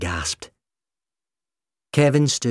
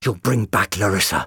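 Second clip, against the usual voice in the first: ordinary delivery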